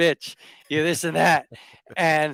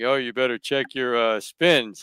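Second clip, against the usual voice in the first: very deep, low bass voice; 4 semitones lower than usual. Retelling a message from Tim about checking your spins, in Tim's deep-ass voice. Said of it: "in his deep ass voice".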